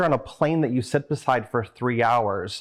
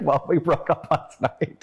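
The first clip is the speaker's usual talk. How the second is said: play-acted speaking through tears, crying; 4 semitones higher than usual. Retelling answering a lunch companion about a breakup, imitating own tearful voice. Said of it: "And then I start crying".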